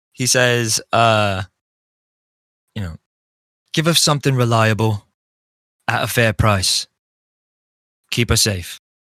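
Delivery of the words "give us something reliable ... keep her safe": charming, persuasive, silver-tongued voice, almost harmonized. In a tabletop game, the player voices his character in a persuasive, charming voice. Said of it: "in like his persuasive, charming voice".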